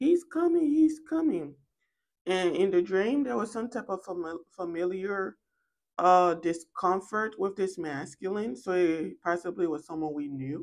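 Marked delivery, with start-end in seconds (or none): 0.0-1.6 put-on very high, piercing, shrill child's shout. Retelling a dream where a four-year-old sees a man: imitating a child yelling. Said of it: "she starts yelling".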